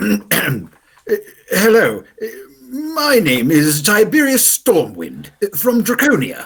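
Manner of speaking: very high character voice swooping up and down in pitch. Narrating a scroll's message heard aloud in the listener's mind: Tiberius Stormwind voice. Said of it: "That was a good impression there".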